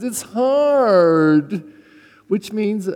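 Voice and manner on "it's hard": put-on Valley Girl voice. Speaker acts out what the valley girl says when urged on, valley girl voice. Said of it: "That's what the Valley Girl says".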